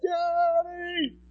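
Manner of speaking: thrilled, very high, drawn-out excited cry. Retelling a daughter greeting her dad at lunch: imitating Rosie's excited cry. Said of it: "She's so excited".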